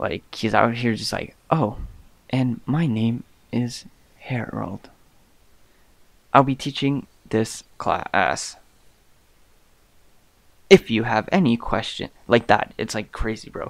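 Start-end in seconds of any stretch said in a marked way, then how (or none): 1.5-12.1 drawn-out slow monotone drone like a robot. Imitating a teacher who talks like a robot, imitating robotic talk. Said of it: "he talks like a robot too".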